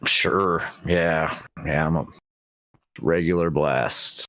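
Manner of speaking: flat, unenthused tone. Asked by the host about doing all the fun things; flat, unexcited. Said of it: "Feel the excitement in your voice".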